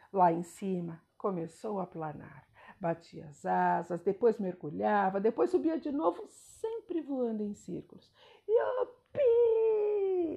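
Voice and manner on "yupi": very high, long, drawn-out whoop of delight. A narrator reads the turtle's cry while the eagle circles in the sky: shouted. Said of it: "gritava a tartaruga".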